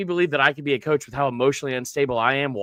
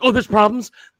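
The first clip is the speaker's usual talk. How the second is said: loud, high, put-on instantly angry tone; 7 semitones higher, 7 dB louder than usual. Retelling a coach's reply to criticism: imitating Shane Beamer getting mad. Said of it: "it's just weird how mad he gets right away".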